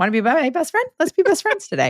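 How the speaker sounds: bouncy, eager, puppyish sing-song, very high and rising. Acting out own eager greeting, like a golden doodle: imitating eager puppy-dog friendliness. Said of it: "I'm like your golden doodle".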